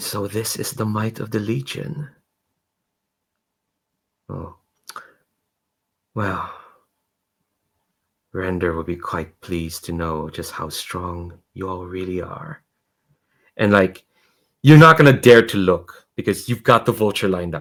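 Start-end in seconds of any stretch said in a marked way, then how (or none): 0.0-12.6 very quiet, soft, mild-mannered, unassuming voice. Narrating a scenario, a voice speaks up near someone lining up a shot, soft and unassuming. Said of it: "kind of like soft, kind of like unassuming voice".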